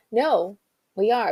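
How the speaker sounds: plain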